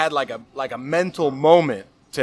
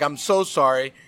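mock child crying, slower. Retelling how a kid on the floor apologized after being chased, imitating a crying kid. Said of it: "He's crying".

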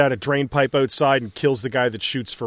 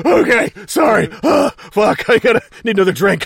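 put-on breathless voice, louder; 7 semitones higher, 5 dB louder than usual. Retelling a scene, the speaker acts out Craigie being out of breath. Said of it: "Craigie is so out of breath".

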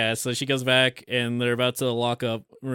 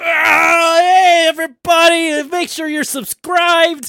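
"ah" stretched out, belted loudly and slowly; 12 dB louder than usual. Joking that the Beast transforms into a YouTuber: MrBeast voice. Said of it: "it's just Mister Beast".

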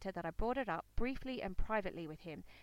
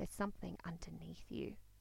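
quiet, soft, lower and much quieter voice; 3 semitones lower, 7 dB quieter than usual. Retelling their own words to Damien, speaking quietly. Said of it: "I said quietly to Damien".

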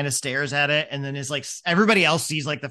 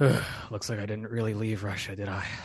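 muttered under breath, much quieter; 5 semitones lower, 7 dB quieter than usual. In a roleplay game, a player's character looks around and mumbles under breath. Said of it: "mumble under my breath".

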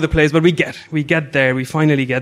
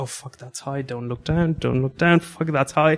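mock muttering under breath, quieter; 7 dB quieter than usual. Retelling a friend behind, running up high: imitating someone mumbling under breath. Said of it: "just starts mumbling under his breath".

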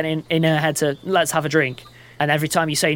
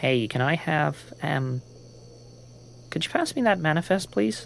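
quiet, breathy, polite, hushed near-whisper; 8 dB quieter than usual. Late in the evening, Earhart speaks up to Azu; quiet. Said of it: "Earhart just quietly says".

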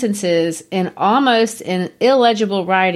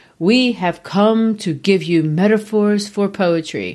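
otherworldly voice of a speaking spirit. Reading aloud the spirits' answer from the automatic-writing sessions: spirit voice. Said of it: "good spirit voice".

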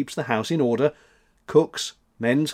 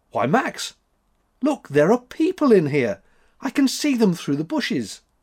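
high, amazed, astonished exclamation; 8 semitones higher than usual. Thekla, with Max in the wood, spots people through the bushes, astonished exclamation. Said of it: "Thekla exclaimed in an astonished voice".

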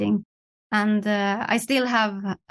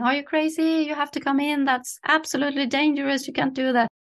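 raised pitch, shouted, calling out; 5 semitones higher than usual. Recalling her mother running out onto the balcony, retelling a mother's shout. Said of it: "my mother came running out on the balcony just shouting".

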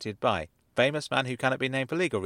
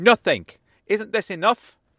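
very loud, high bellow; 7 semitones higher, 8 dB louder than usual. Asked what else he ignored over the years, a man answers, bellowing. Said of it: "he bellowed at the corner".

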